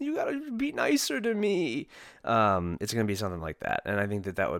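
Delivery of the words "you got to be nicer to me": put-on crying and pleading, higher pitch. Acting out an imagined scene in Ryan Day's office: imitating Ryan Day crying. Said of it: "he's just gonna start crying".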